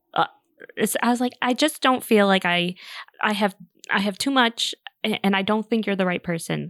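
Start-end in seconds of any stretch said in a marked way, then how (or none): none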